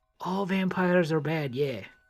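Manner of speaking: speaking in a whisper. Whispering in character to another character passing by: whispering. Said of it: "Akashima's gonna whisper".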